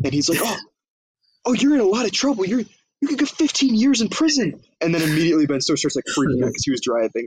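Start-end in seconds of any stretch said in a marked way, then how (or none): 0.4-4.6 loud, very high, overwrought emotional outburst. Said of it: "loudly and, like, very emotionally".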